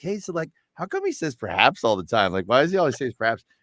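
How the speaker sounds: playful teasing tone with swooping pitch. Retelling a question once put to an author: retelling a teasing question. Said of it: "almost like teasing him".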